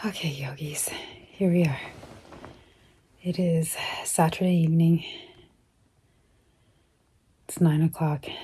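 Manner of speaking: completely winded, out of breath. Speaker greeting yogis on Saturday evening, completely winded. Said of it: "I'm completely winded".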